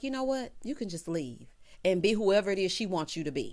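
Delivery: plain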